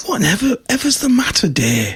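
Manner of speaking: whispering. Storyteller voicing a wife stepping in on her teary husband at night, whispering. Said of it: "She kind of whispers to him".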